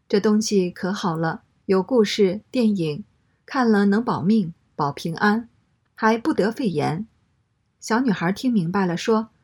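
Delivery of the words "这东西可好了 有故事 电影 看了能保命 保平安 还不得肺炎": normal talking voice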